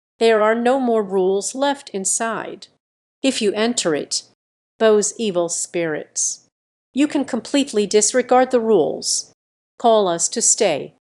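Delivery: ordinary delivery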